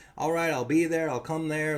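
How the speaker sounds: normal talking voice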